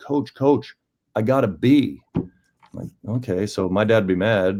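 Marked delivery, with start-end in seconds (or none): 0.0-2.0 excited, high-pitched shout from a distance. Coach recalls a student yelling to him from a hundred feet away, retelling a yell. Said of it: "he's yelling at me".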